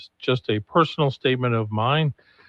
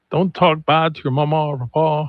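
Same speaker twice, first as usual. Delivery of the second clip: amateurish put-on Cajun accent; 3 semitones higher than usual. Recalling a young woman's video from years ago, quoting it in an attempted Cajun accent. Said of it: "I shouldn't even try a Cajun accent".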